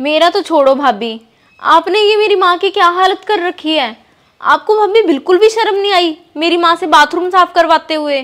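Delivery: furious, angry scolding outburst. In a drama, a woman confronts her sister-in-law about her mother: angry scolding. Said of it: "इतना गुस्सा क्यों कर रही है?".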